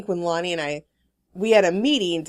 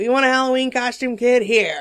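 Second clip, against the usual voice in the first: put-on tough-guy gangster voice, loud and raised; 6 semitones higher, 5 dB louder than usual. Picturing a thirties mom making her kid a halloween costume, the speaker uses a gangster voice. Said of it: "I don't know why I'm making her talk like a gangster".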